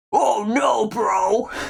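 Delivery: put-on gruff, rough, creaky tough-guy voice. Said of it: "I wish I could do a muscle man voice".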